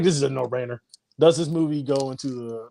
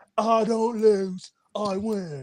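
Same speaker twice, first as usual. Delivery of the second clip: very slow, stiff, high dragged-out Southern drawl; 8 semitones higher than usual. Joking about a movie role, imitating Keanu Reeves Southern accent. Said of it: "it's Keanu's Southern accent".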